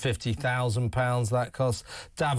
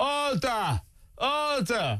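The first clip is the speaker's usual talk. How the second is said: very high-pitched put-on voice with swooping tune; 11 semitones higher than usual. Retelling how 'order, order' is said to the Cayman Islands House Speaker: put-on imitation voice. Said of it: "I say it like this, ... doing his usual voice, ... fantastic impression".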